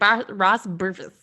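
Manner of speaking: name mumbled, swallowed and run together. Imitating the other speaker's way of saying a name: imitating mumbling a name. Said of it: "you always kind of, like, bury the names".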